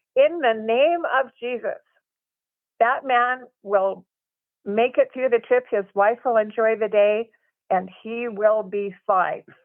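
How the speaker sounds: mock authoritative, commanding, declaring voice. Retelling what an excursion hostess on a catamaran proclaimed: imitating her loud commanding voice. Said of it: "in a really loud, commanding voice says".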